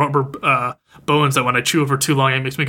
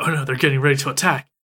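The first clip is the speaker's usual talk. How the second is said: put-on paranoid dog voice. Retelling how the dog grows paranoid as the window opens: imitating Muko getting paranoid. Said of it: "she starts getting paranoid".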